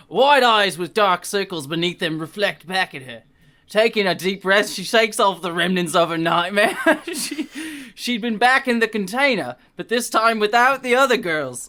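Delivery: put-on Cockney accent. Reading a book passage aloud in a put-on voice: Cockney accent. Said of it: "maybe the Cockney's not the best choice for this".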